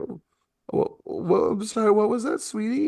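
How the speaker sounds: very high, teary stammer. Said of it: "you can see the tears just sort of, like, f-, flowing".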